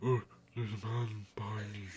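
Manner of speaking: put-on worn, ragged old-geezer voice. Imitating another person's voice acting of a young man: old ragged voice. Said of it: "you do this, like, old, ragged voice".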